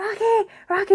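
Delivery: very high shouting call. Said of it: "she's, like, shouting".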